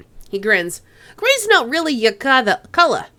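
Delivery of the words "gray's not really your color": put-on raised, loud, higher-pitched light New York accent. The narrator voices the player's near-brother, unseen for eight years: New York accent as Duncan Wu. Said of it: "he's gonna be a bit New York".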